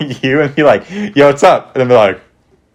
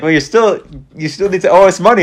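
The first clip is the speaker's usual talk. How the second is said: put-on, fake, vaguely Italian accent; 6 semitones higher than usual. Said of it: "she was using, like, an Italian accent or something".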